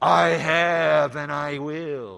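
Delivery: very loud, resounding, slow booming voice. A preacher quotes the voice from heaven answering Jesus, in a booming voice. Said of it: "here comes this booming voice".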